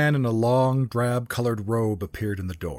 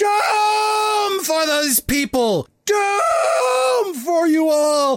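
put-on very high, creaking old-man shout; 5 dB louder than usual. Narrating a story where an old man shouts in a bar, creaking old man's shout. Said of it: "his voice creaking like the hips of 100 grandmothers".

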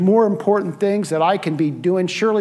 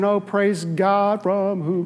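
slow, calm, unbothered, serene voice. Retelling being followed by a honking driver at a school: mock-calm retelling. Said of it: "I was just calmly saying".

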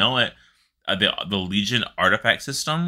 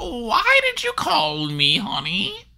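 put-on very high grandma voice, swooping way up. Imagining a female version of the Voidwalker, doing a grandma Voidwalker voice. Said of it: "I want like a grandma Voidwalker".

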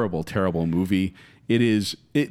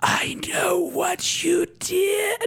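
very high, creepy voice with words dragged out. Imitating a movie killer calling someone on the phone: imitating a scary whisper on the phone. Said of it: "That's actually kinda scary what your voice was".

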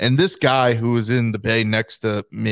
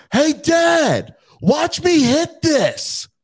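put-on very high, very slow, drawn-out child scream. Retelling a child at the golf range: imitating a child screaming. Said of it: "screaming it".

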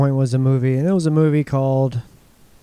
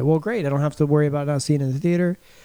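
plain

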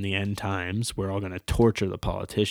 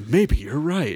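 big, expressive delivery in a high pitch; 5 semitones higher than usual. Speaker acts out how he answered being challenged, retelling an expressive reply. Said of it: "he says it in such like an expressive way".

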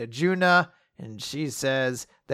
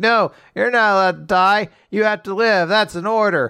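sobbing, tearful crying voice; 3 semitones higher, 4 dB louder than usual. Retelling a scene where Witch is about to die, imitating Shiki crying. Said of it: "Shiki's crying".

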